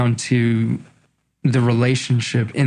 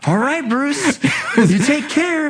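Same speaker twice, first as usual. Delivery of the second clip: mock overly cheery, too-light voiceover voice, higher; 14 semitones higher than usual. Retelling a voiceover take that came out too light: imitating own too-light cheery voiceover. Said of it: "I was still in that mode of".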